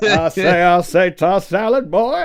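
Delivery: booming, drawn-out high holler. Joking along about a bit: Foghorn Leghorn voice. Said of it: "we turned him into Popcorn Leghorn".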